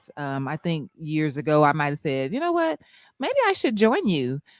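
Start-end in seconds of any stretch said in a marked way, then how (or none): 2.3-4.4 exaggerated, very high, rattled-off voice. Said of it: "in my whitest voice".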